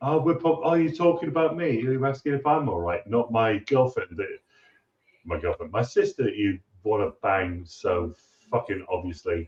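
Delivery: put-on prim, overly courteous British politeness. Quoting a character's lines to show their Britishness: imitating British manner. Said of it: "that Britishness of, like".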